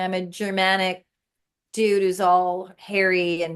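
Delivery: plain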